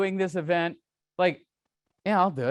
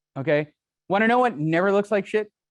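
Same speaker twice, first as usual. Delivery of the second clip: normal talking voice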